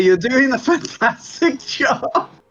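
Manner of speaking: very slow, loud, encouraging calling out. Shouting back to the Lieutenant in character: shouting encouragement. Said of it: "I'm going to shout back to Lieutenant".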